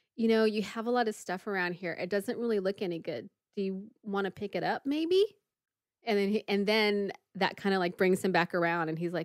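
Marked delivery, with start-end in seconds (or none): none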